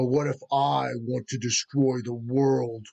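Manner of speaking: huge, deep, powerful monster voice from low down. Narrating a creature getting up to answer a plea, in a deep, powerful voice. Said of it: "it says in this really deep, powerful voice".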